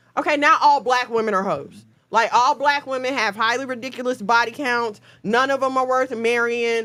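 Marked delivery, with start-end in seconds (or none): none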